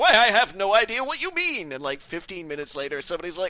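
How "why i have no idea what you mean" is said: put-on old-time colonial New England accent, pitched up. Acting out a general dismissing a warning before a battle, in a put-on colonial new england accent. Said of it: "that's my colonial New England accent".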